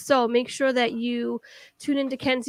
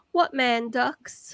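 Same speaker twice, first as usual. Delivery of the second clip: bad, failed, fake British accent. Retelling a story, the speaker voices a woman's reply to her friend: bad British accent. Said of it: "that was totally not a British accent".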